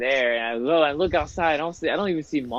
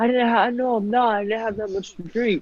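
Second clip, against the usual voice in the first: play-acted, pitched-up, tipsy, drunken voice; 9 semitones higher than usual. Retelling a mother denying she is drunk: imitating a drunk mom. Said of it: "I think you're drunk".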